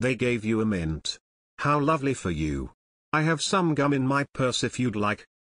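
usual speaking voice

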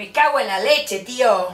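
Castilian Spanish accent from Spain. Taking the last turn and trying a spain spanish accent. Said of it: "acento español me va a salir".

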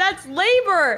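put-on shout. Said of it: "'cause I yelled".

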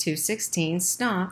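plain

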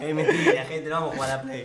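high, loud, laughing delivery.

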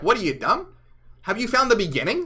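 acted sarcastic mocking tone. Retelling how Jesus answers the disciples: imitating Jesus mocking. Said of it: "he's kind of mocking them".

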